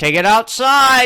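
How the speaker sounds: mock yelling. Retelling a comedy room where one comic yells at a couple: imitating someone yelling. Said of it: "one of them yells".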